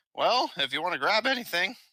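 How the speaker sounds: put-on voice cracking like a teenager's, pitched high. Describing a character's shrug, then voicing his reply in a cracking teenage voice. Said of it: "You're really trying to do that cracky voice".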